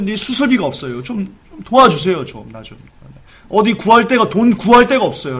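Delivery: acted, plaintive, desperate pleading beggar voice. Acting out a parent begging for a child's surgery money: imitating a desperate plea. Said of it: "애절한 심정".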